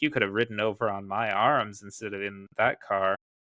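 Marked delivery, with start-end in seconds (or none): none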